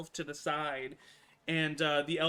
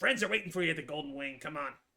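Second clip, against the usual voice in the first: put-on creature voice. Voicing a goblin who tells a prisoner to follow: goblin voice. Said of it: "and he says".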